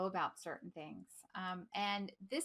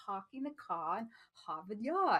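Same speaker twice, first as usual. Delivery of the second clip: bad put-on British accent with R's dropped. Showing how a british accent drops the r's: bad british accent. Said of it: "I could do my bad British accent".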